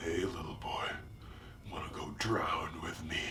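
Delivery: very deep, very low, very soft hushed murmur. Recounting a man who grabbed his arm by the road: really deep voice. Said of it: "he said in his really deep voice".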